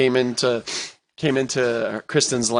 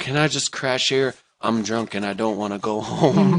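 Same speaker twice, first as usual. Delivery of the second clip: ordinary delivery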